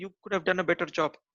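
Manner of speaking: plain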